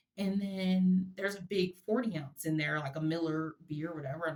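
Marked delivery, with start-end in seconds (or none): none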